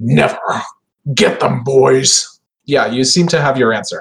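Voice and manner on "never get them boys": slow, resonant, drawn-out monster creature voice. Game master voicing the horror's answer to the players' appeal, deep resonant horror voice. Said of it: "the horror's deep resonant voice saying".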